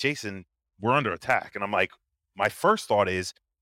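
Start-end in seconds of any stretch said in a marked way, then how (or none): none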